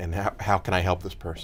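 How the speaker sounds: ordinary delivery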